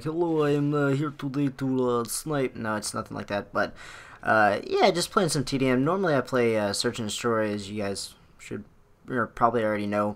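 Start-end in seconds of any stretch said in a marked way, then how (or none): 0.0-2.5 put-on Russian accent, slower. Opening a gaming video, joking about sounding like a Russian sniper, in a Russian accent. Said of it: "Sounded like a Russian sniper".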